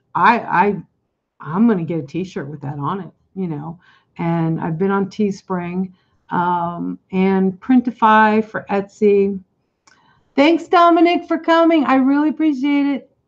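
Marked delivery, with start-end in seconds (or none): 10.3-13.0 shrill, high, loud yell meant to carry. Thanking someone for coming and calling out to them: yelling. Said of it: "I'm yelling".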